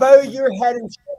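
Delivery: raging, loud, furious scream. Standing close to the pitch, the speaker re-enacts what they screamed at him, retelling own screaming. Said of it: "I was screaming".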